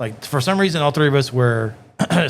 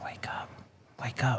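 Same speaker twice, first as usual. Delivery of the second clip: gentle, soft, barely voiced whisper; 14 dB quieter than usual. Retelling a movie scene where a girl wakes her unconscious boyfriend, whispering. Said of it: "She's like whispering to him".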